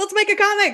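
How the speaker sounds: thrilled, excited yell, very high. Starting the assignment with the group, in excited yelling. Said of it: "sorry to yell. I'm excited".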